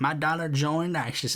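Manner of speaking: put-on rural Southern accent. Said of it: "speaking in this really southern rural accent".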